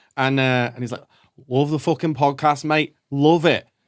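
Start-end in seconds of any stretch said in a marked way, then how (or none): 1.5-3.7 put-on Scouse accent. Retelling what a man eating a chicken tikka roll said, scouse accent. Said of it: "this beautiful Scouse accent going".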